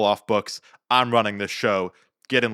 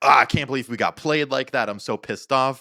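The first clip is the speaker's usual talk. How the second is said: acted freaking out; 4 semitones higher than usual. Retelling a woman's reaction after they got played, imitating someone freaking out. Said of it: "freaking out".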